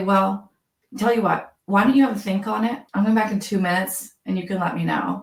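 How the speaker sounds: ordinary delivery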